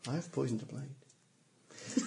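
quiet, mumbled aside. A game master voices a duelist muttering to the party, muttering. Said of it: "he kind of mutters to us".

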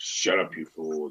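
very deep, low, muted, hushed voice. Telling a story, voicing someone who silences another, in a far lower voice. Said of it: "a far lower voice say".

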